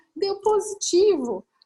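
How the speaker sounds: high, slow voice through tears.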